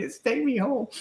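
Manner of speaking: high, tearful, sobbing crying voice. Retelling asking the lights to take her home: retelling own crying. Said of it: "I'm crying".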